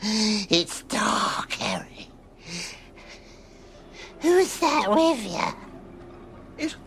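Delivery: put-on possessed old woman voice. Answering her son, who is calling out to her, in possessed old lady voice. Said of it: "his old possessed lady voice".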